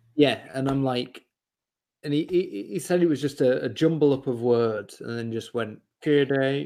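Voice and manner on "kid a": robotic voice, louder. Retelling a TV advert a friend remembers: robot voice. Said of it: "in, like, a, a robot voice".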